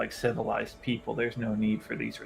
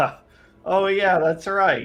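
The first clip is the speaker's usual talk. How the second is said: laughing through the words, pitched up; 7 semitones higher, 4 dB louder than usual. Recognizing a rival's voice in character: laughing while talking. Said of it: "I just laugh and be like".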